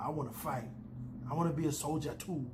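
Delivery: bad fake Scottish accent, put-on girl's voice. Recapping a scene, quoting a creepy little girl: terrible Scottish accent. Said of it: "little creepy girl with a deeply Scottish accent".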